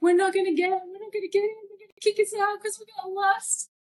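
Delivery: high, put-on tearful crying through tears. Retelling sitting on the ground after getting lost: imitating own past crying. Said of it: "I was crying, going".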